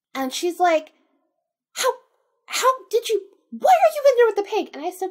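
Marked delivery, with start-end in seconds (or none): 1.8-4.7 high, loud, alarmed yell. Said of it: "yelling at me".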